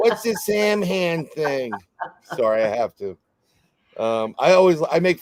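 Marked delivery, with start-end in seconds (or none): 0.0-1.7 overdone, exaggerated New York accent, pitched up. Making fun of your own New Yorkers over how a Gaelic word is pronounced, put-on New Yorker voice. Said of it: "my New Yorker Sam hand".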